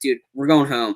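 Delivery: plain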